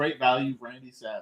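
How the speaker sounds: ordinary delivery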